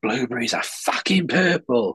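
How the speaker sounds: mock half-strength screamed outburst, mild and held in. Retelling a puppet comedian's reply to an audience member: imitating a scream.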